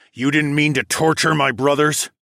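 menacing, threatening growl. First-person narrator confronts a stammering man about his brothers: growled menacingly. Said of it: "I growled as I took a menacing step closer".

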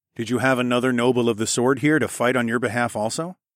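ordinary delivery

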